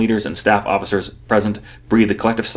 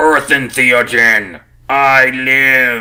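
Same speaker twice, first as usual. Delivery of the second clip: booming, synthetic announcer voice, drawn out; 4 semitones higher, 5 dB louder than usual. Narrator reads a synthetic voice suddenly speaking over the annunciator; booming synthetic voice. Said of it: "The synthetic voice booms suddenly".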